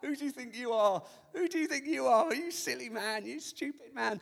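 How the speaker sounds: scornful, laughing, mocking jeer. Retelling how the professional wailers laughed at a man, acting out mocking laughter. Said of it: "They're all laughing".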